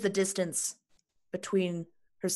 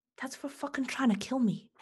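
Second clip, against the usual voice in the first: whispered, higher pitch; 5 semitones higher than usual. Voicing a character leaning close to a Kenku's ear: whispering in character. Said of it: "just whisper that into its ear".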